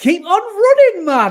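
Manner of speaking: accent from Sunderland. Reading out the sign-off of a listener's email: Sunderland accent. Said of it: "in my best Sunderland accent".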